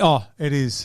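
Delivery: ordinary delivery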